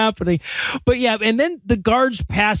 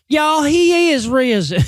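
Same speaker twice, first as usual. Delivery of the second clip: very slow, drawn-out, high Southern lady drawl; 5 semitones higher than usual. Retelling a scene from a film: imitating a very Southern lady. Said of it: "this very Southern lady goes".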